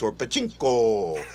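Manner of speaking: very deep, low Italian accent mixed with caveman. Saying his name the way it sounds in their head, Italian mixed with caveman. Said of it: "Italian mixed with caveman".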